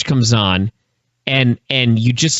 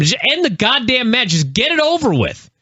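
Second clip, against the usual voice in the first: high-pitched scream, hurled out forcefully; 10 semitones higher than usual. Recalling yelling at a bad match while watching it, retelling a scream. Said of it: "you're screaming at them".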